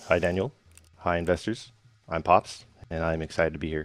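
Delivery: flat, level, unenthusiastic monotone with no spark. Greeting the investors while teammates cheer him on, in a flat, unexcited delivery. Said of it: "I don't hear that in your voice".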